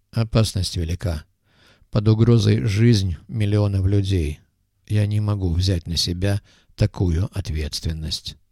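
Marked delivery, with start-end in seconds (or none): none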